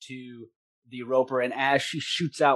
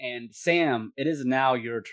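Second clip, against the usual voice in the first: normal talking voice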